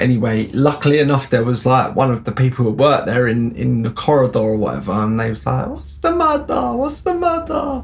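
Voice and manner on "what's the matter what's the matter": very high, goofy, silly put-on voice. Retelling what a worker in the corridor asked: put-on voice imitating a worker. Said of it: "not that people, like, from the Dominican Republic speak like that".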